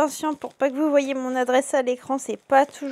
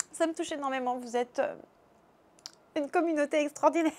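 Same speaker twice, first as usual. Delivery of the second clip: choked-up, tearful, emotional voice close to tears; 8 dB quieter than usual. Thanking viewers for birthday messages, emotional, close to tears. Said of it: "je suis un peu émotive aujourd'hui".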